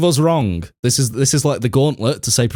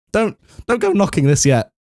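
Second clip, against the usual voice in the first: voice cracking up high mid-line; 8 semitones higher than usual. Defending the prediction video's planning to your co-speaker Dex, with your voice breaking. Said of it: "That voice break".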